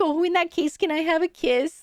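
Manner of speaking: bashful, shy, sheepish small voice. Retelling a man asking for a kiss: imitating someone speaking shyly. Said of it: "really shyly being like".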